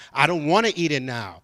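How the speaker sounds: usual speaking voice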